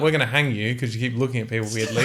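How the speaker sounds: normal talking voice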